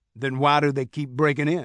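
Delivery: ordinary delivery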